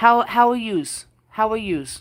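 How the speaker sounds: put-on Jersey accent. Speaker greeting viewers, in a New Jersey accent. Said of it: "I got the Jersey going on".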